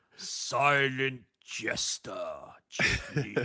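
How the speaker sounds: sinister, evil announcer voice. Imitating the announcer introducing Jake Lee: evil heel announcer voice. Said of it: "the announcer does his evil heel voice to say".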